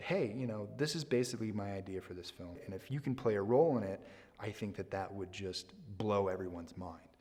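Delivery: normal talking voice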